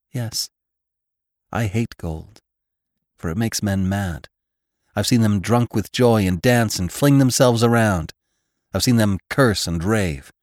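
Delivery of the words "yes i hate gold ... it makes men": plain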